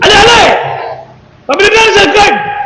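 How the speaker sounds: high-pitched shouting.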